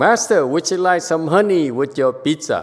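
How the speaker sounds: mock-proud tone. Retelling what the temple staff said when offering food, imitating a proud offer. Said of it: "Very proudly".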